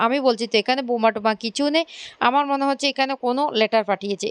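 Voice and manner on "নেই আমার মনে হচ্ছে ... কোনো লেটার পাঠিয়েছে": ordinary delivery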